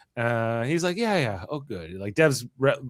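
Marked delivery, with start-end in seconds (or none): 1.0-2.0 put-on overly chill voice, quieter. Retelling a scene's reply to a demand for help: imitating Dev, overly chill. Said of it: "he's overly chill here in this scene".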